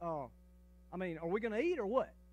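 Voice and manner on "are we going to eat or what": plain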